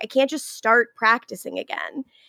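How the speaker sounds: plain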